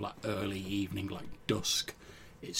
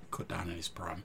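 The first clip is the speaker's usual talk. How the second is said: subdued, slightly quieter, downcast murmur; 3 semitones lower, 7 dB quieter than usual. Recounting a grumpy character's words, in a slightly quieter voice. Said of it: "in a slightly quieter voice".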